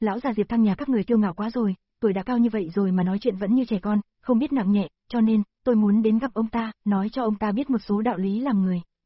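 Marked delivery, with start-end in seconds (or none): none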